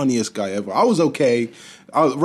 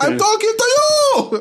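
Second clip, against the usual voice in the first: very high, fake, put-on Spanish accent; 4 dB louder than usual. Retelling a woman's reply when asked who she was talking to, Spanish accent. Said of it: "That was my Spanish accent".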